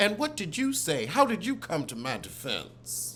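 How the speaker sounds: ordinary talk, nothing marked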